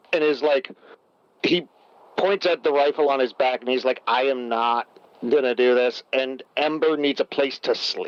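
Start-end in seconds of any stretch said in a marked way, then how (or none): 4.0-6.0 put-on flat, expressionless tone. Storyteller acts out a game character's reply to another character, retelling a deadpan line. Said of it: "with like this just deadpan".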